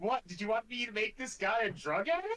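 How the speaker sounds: sudden, high-pitched exclaiming outburst. Player character leans over to another character and asks, very loudly. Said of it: "Very loudly".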